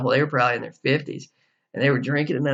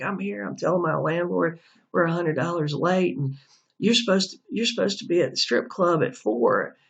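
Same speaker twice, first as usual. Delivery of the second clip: heated, screaming, scolding rant; 6 semitones higher than usual. Retelling a tenant screaming at his girlfriend about rent: imitating someone screaming. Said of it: "he starts screaming at her".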